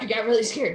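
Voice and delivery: quietly muttered under breath. Voicing a character who repeats her answer: muttered under her breath. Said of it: "under her breath".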